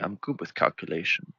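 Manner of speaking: put-on terrible Chinese accent, hushed and soft. Likening the listener to the mob boss from The Dark Knight, terrible accent. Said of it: "Terrible accent right there".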